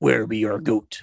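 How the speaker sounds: monstrous monster voice. The Satanists' leader, standing over two sleeping bullies, asks in a monstrous voice. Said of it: "the leader asking in a monstrous voice".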